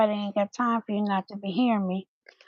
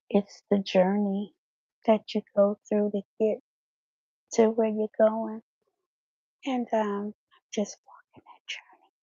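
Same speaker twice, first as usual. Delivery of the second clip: hushed, soft whisper. Talking about the YouTube journey with a mic on, whispering. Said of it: "Why am I whispering?".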